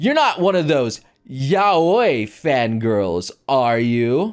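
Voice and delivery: mock smug, slow, self-satisfied, stretched-out words. Retelling a question put to a girl at a meeting: imitating own smug question. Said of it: "I said smugly".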